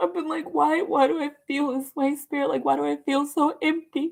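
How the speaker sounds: high, tearful voice, speaking through tears. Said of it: "I'm crying because".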